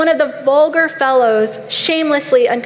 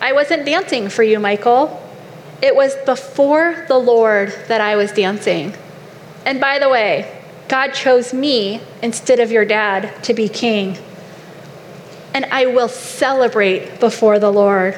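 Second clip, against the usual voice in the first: ordinary talk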